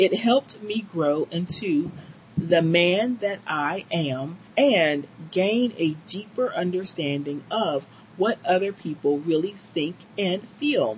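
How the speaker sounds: ordinary talk, nothing marked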